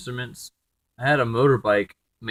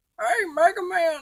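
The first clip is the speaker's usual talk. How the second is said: grandpa voice with pitch way up. Trying out the voice being considered for the character Gramps: Gramps voice. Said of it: "this is the voice I was considering giving to Gramps".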